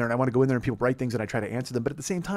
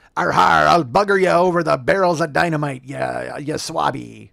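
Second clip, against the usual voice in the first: loud, rough, slow sea-dog pirate voice; 2 semitones higher, 6 dB louder than usual. Hosts mention a Talk Like a Pirate podcast; speaker breaks into a pirate voice. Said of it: "that was pretty good".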